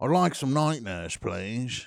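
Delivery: fake British accent, laid on thick. Ordering Night Nurse at a counter, in a put-on British accent. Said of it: "do a British accent while you go".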